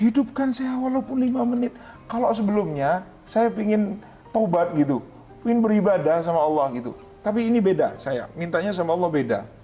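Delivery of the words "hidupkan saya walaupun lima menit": high, tearful, crying, pleading voice. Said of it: "Saya nangis".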